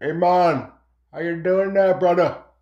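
put-on Jamaican-style dude voice and accent. Introducing a carved pumpkin and voicing it, in a Jamaican accent. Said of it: "kind of like a Jamaican dude".

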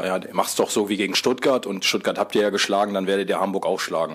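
ordinary talk

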